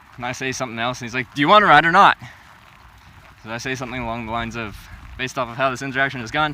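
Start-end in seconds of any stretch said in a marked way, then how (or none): 1.3-2.2 very loud, mean voice. Retelling a man's reply, quoted again more meanly: imitating a mean voice. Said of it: "I'm not good at doing a mean voice".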